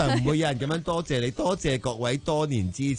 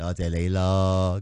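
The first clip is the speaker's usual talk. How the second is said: slow, sulky, begrudging, put-upon tone; 9 semitones lower than usual. Contrasting ways to say thank you, the huffy kind: sulky, grudging thank-you. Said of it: "系嗰啲晦气啲。多謝你咯，咁样。".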